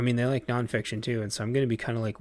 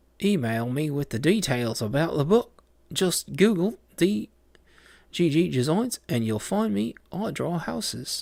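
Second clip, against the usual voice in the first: put-on Australian accent slipping into Kiwi, raised; 6 semitones higher, 5 dB louder than usual. Speaker attempting an Australian accent that keeps drifting: put-on Australian accent slipping Kiwi. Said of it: "that's Kiwi again".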